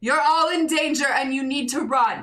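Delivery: loud, high-pitched, big showman stage voice. A character jumps on stage and speaks in her loudest, biggest performer voice. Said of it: "with like her loudest, biggest performer voice says like".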